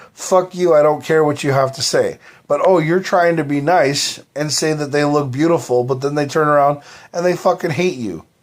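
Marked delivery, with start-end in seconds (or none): none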